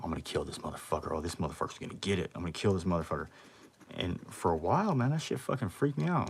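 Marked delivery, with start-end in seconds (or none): 0.0-3.3 acted-out muttering under the breath. Retelling what a bunkmate said every night: imitating muttering under breath. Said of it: "talking under his breath".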